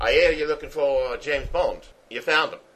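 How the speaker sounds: put-on really thick, broad Australian accent. Retelling how a man barged into Saltzman's office, in a thick Australian accent. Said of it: "he's got like a really thick Australian accent".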